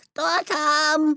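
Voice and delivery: put-on high old grandmother voice, "там" drawn out. Answering a knock at the door, trying to speak in grandmother's voice. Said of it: "стараясь говорить бабушкиным голосом".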